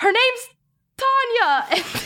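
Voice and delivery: very high, shrill shouted yell. Declaring a character's action at a door, then yelling in character. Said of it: "and then yell".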